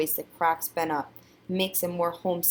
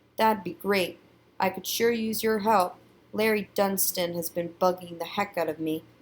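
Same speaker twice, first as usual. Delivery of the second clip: plain reading voice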